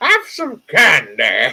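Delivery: high, swooping cartoon villain voice. Chatting about Disney villains, the speaker slips into a King Candy voice. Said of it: "I love King Candy's voice".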